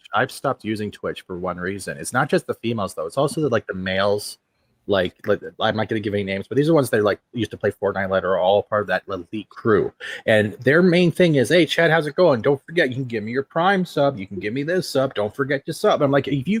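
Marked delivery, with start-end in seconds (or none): 11.4-16.0 pushy, pitched-up car-salesman patter. Speaker mocks Twitch streamers asking viewers for subs; car-salesman voice imitation. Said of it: "you sound like a car salesman".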